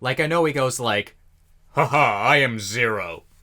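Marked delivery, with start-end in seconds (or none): 1.7-3.2 lowered, theatrical, very slow, drawn-out villain voice. Imitating how a character speaks as Zero: Lelouch's lowered Zero voice. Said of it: "lowers his voice and all that".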